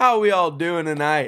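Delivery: speaking loudly. Greeting the others on joining the segment: loud. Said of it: "You're a little loud there".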